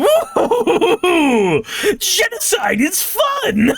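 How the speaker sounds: belly laugh, then very high, swooping, drawn-out cartoon villain. Showing another speaker how to write Eggman: Eggman voice with belly laugh. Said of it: "do a whole belly laugh and go".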